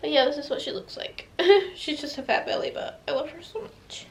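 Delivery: breathy, tearful whisper. Showing off the pregnancy bump, crying while talking. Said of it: "I don't know why I'm crying".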